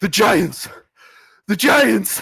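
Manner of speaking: gasping, breathless, very drawn-out panicked cry. Voicing a guard bursting into the castle, breathless guard crying out. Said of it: "breathless, and he says".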